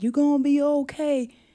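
put-on heavy Southern accent, high. Retelling what a man dragging him through the woods said, heavy Southern accent. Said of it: "He had like a heavy Southern accent".

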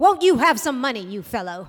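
loud, haughty, imperious, commanding tone. He accosts a suspicious stranger under a lamppost, speaking imperiously. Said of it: "he said imperiously".

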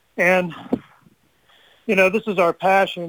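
out of breath, winded, breathing hard. Just out of a store, speaking out of breath. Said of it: "sorry, I'm out of breath".

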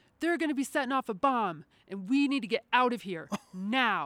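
put-on, excited, urgent, alarmed screaming. Retelling a security escort running up screaming a warning: imitating someone screaming. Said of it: "and she's screaming".

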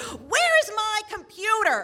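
very high, shrill, exasperated, frustrated scream. Retelling screaming at the air in frustration: retelling a frustrated scream. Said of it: "so I just scream at the air".

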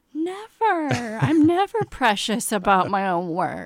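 high, laughing sarcasm. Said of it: "That was sarcasm".

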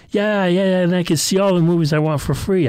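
upbeat cheerful voice. Answering their mom's question, cheerfully. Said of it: "I said cheerfully".

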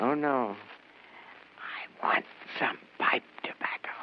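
hushed whisper, under the breath. A late customer ordering from the shopkeeper, whispering. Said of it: "what are you whispering about?".

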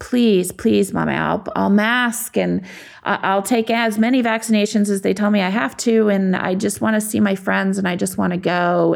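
put-on tearful, desperate, stumbling child's pleading voice. Retelling how a son begged to go back to school: imitating Liam begging. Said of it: "He was begging and just".

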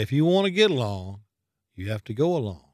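put-on Texan drawling accent. Retelling what the Speaker told congressmen, in Mr. Sam's Texas drawl. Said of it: "in his Texas drawl would say".

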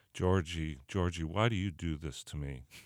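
softly spoken. Retelling what one man said to another who missed a block, very quietly. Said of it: "Mo would say to him very quietly".

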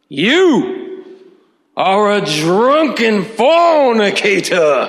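loud, gravelly, very high preacher voice. Narrator voices the preacher's words aimed at him, in a gravelly preacher voice. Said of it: "his voice sounded like a gravelly Harley-Davidson motorcycle engine".

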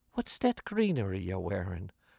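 soft, gentle, almost lilting sing-song. Narrator voicing the fourth-grade teacher questioning a pupil, soft, almost lilting. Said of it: "Her voice went soft, almost lilting".

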